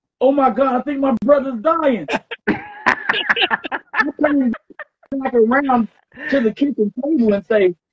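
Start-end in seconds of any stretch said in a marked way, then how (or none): 0.2-2.1 mock toned-down scream, rushed, mildly alarmed, words tumbling. Retelling how a friend screamed when his brother fell out, imitating someone screaming. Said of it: "he screams".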